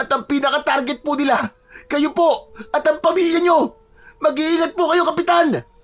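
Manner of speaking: very high, frantic, panicked but polite. A guard phones the village captain with a warning, panicked. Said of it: "Si Gilbert ay natatarantang pinuntahan ang guard shed at hinanap sa kanyang bag ang cellphone. / Naku, [name], maganda po kayo riyan. Alertuin niyo po mga tanod niyo at sabihan na rin po mga taga-bary".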